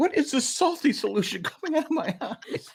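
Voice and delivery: very high, drawn-out, tearful blubbering crying voice. Retelling a sitcom scene where a character suddenly cries: mock crying as Jerry. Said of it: "all of a sudden he's crying, he's like".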